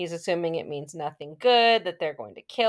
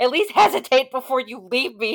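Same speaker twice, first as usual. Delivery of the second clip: loud, high-pitched scream; 7 semitones higher, 7 dB louder than usual. Retelling what he screamed out as Hangday left: retelling a scream. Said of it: "And he screams out".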